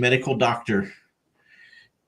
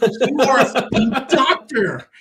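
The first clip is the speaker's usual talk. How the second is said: high, loud, slow, incredulous laughing delivery. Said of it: "I'm like".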